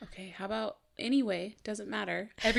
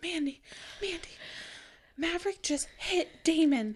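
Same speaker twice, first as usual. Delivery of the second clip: put-on breathless, hyperventilating kid voice; 7 semitones higher, 4 dB quieter than usual. Retelling a kid running out to report a hit: imitating Anna hyperventilating.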